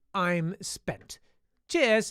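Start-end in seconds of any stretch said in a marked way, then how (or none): none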